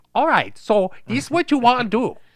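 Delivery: very high, very loud belted dub voice. Imitating how a movie star sounded when dubbed: imitating Bruce Lee's dubbed voice. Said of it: "He would be like this".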